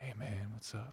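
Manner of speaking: hushed, very quiet, super-mellow stoner voice. Recalling a stoner from high-school class, imitating Johnson, really mellow. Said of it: "really mellow".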